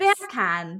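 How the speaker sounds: beer can said with a British accent. Showing the others how the words sound: british accent. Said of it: "if you say beer can in a British accent".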